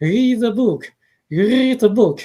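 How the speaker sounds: high, loud, thick French accent.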